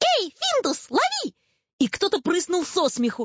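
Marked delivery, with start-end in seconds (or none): 0.0-1.3 shrill, thin, tiny piping voice, very high pitch. Narrator reading someone calling out to a cat: thin shrill little voice. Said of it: "тонкий пронзительный голосок".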